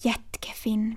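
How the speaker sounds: whispering. Pontus speaks to the narrator beside a house's open window: whispered. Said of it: "viskade Pontus".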